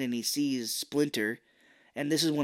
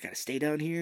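imitated panicked freaking out; 3 semitones higher than usual. Retelling a movie scene, quoting a character: imitating character freaking out. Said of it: "freaking out 'cause he's like".

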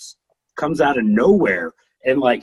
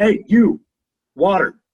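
play-acted raised, brusque, curt, dismissive rude tone; 5 semitones higher, 5 dB louder than usual. Imagining a wrestler demanding water instead: imitating a rude demand. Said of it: "Instead of a".

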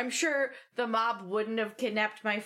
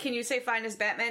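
ordinary talk, nothing marked

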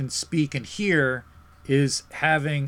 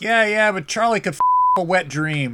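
mock chuckling through the words, high swooping pitch; 5 semitones higher, 5 dB louder than usual. Retelling what his dad said to his buddies; retelling dad's laughing line. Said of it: "he's laughing".

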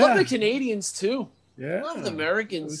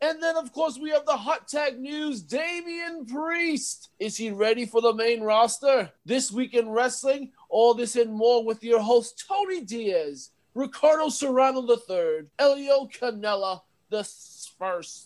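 put-on old British voice, much higher pitch; 6 semitones higher than usual. Introducing the week's wrestling news segment: put-on old British accent. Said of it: "that was just my inner Britain person".

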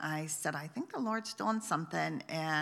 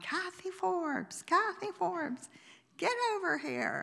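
mock very high, shrill hollering call; 13 semitones higher than usual. Retelling calling someone over from across a room: retelling hollering a name. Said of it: "I started hollering".

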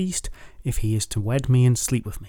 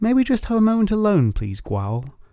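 honeyed, gentle, sweet, pitched-up voice; 9 semitones higher than usual. A woman speaks to the man who plans to take her away, sweetly. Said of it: "asked Rhiannon, sweetly".

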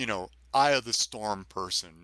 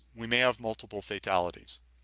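ordinary delivery

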